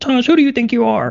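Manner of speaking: very high-pitched goofy, funny, silly voice. Speaker showing how he scolds himself out loud, funny voice. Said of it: "I'll even do a funny voice sometimes".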